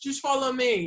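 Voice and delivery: put-on, very loud, high call. Recounting someone calling out in the lit aisles during a show; retelling a loud call. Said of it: "like real loud".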